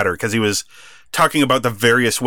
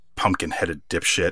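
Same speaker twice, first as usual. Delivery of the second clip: muttered under breath, much lower and quieter; 6 semitones lower, 8 dB quieter than usual. Recapping a wrestling match, quoting someone muttering under his breath. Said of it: "under his breath".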